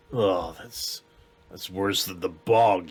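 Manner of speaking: deep, hushed goblin voice. Narrating the voice heard again after crunching leaves, in a deep voice. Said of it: "you hear the deep voice go again".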